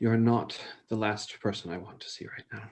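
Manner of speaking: quietly sobbing under the breath. Voicing a character who speaks while sobbing: sobbing under her breath. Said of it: "under her breath, as she's still sobbing".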